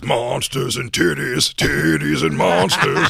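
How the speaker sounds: slow, drawn-out, rough, high-pitched put-on voice. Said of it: "his impression of him is always".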